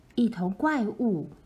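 ordinary delivery, nothing marked

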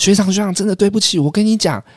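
put-on very high, flustered, panicked babbling voice. Speaker retells what his junior schoolmate said to him: imitating a panicked junior. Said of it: "我那学弟就很慌张哦".

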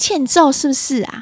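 loud, shrill, hot-tempered, irritable voice. Reading an article's examples aloud, imitating an irritable mother. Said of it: "暴躁的妈妈会这样说".

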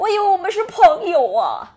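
high, loud, crying voice, near tears.

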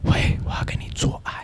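hushed breathy whisper, all breath, no voice. Retelling an early-morning phone call from a stranger: imitating a caller's breathy whisper. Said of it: "他就跟我用气音跟我说".

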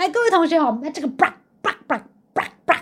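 quacky cartoon duck voice. Imitating the English teacher's blaring classroom microphone, Donald Duck voice. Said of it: "为什么一直有唐老鸭的声音出现".

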